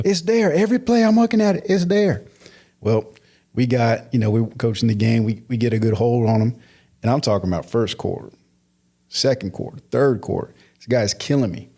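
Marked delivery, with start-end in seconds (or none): 0.0-2.2 put-on yelling, higher pitch. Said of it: "yelling at me".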